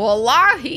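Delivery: slow, drawled mock southern accent. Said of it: "How does somebody with a southern accent say that shit?".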